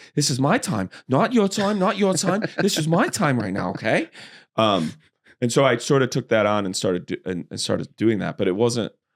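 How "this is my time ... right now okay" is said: high voice with pitch swinging around. Showing Mark Wahlberg in The Fighter going high: Mark Wahlberg voice from The Fighter, high. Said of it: "he does go high a lot, where he'll be like".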